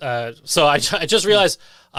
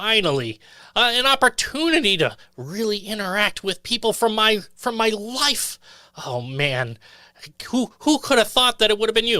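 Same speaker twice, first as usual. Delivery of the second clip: high-pitched little orc voice; 6 semitones higher than usual. Voicing a small orc stepping out of the mist: Justin the small orc voice. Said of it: "This is the voice of Justin".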